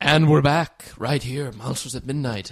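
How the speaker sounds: little, creepy, spooky put-on host voice. The host welcomes listeners back for the last segment in a little creepy voice. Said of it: "I got in my little creepy voice".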